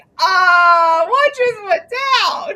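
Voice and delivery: high, slow, bewildered outcry. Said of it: "I seriously was like".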